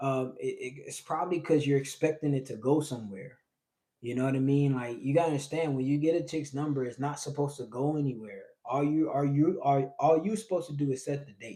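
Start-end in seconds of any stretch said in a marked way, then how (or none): 8.6-11.6 loud stuttering, tripping over the words, restarting. Giving dating advice about texting, stuttering. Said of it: "sorry, I'm stuttering".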